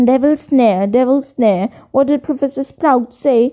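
plain reading voice

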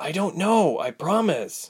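slow hiss through the pain. Ilse answers while Reshma tightens her stitches, hissing in pain. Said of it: "hissing in pain".

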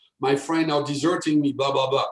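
ordinary talk, nothing marked

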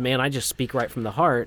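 normal talking voice

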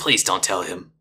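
muttering under the breath. A narrator voices a character walking away: muttering under his breath. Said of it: "mutter under his breath".

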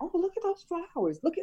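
high, wide-ranging pitch, delighted exclaiming.

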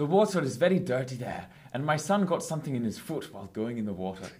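clumsy, shaky, bad fake Scottish accent. On a podcast, trying for a pirate voice; bad Scottish accent. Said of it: "No, that was Scottish".

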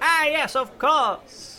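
very high, very drawn-out theatrical stage voice. Recounting how Lacrian voiced his character, imitating Lacrian's character voice. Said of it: "puts the character voice like".

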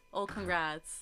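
put-on low, flat, dry, unenthused deadpan monotone. Imitating own reaction after others' cheery congratulations: imitating a dry, flat congrats. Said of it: "And I'll be like".

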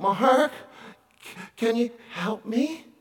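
soft, slow voice heavy with pain. Retelling a phone call from a woman in a wheelchair, imitating a woman in pain. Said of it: "she could hear it in her voice that she was in obvious pain".

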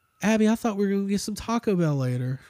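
soft, put-on Southern accent. Imagining what they would say to abby, in a southern accent. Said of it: "I have like a Southern accent for some reason".

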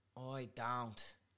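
put-on Dublin accent. Repeating a teacher's example to learn the accent: Conor McGregor Dublin accent. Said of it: "You say "oi" when you mean "I."".

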